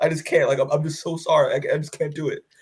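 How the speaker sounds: put-on tearful voice. Retelling a comic scene, acting out Mark crying. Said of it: "my acting game right here".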